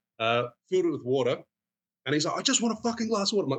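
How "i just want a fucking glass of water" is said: very high, shrill yell. Retelling a pushy customer at a busy bar: imitating a customer yelling. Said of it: "he just kept yelling at him".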